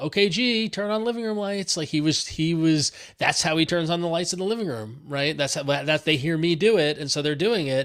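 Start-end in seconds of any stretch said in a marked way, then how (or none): 0.0-1.8 mock, high-pitched, loud called-out yelling. Retelling a voice command the son gave the lights: imitating son yelling. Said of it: "my son yelled".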